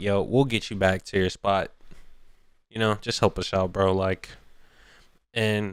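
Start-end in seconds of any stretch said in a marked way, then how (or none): none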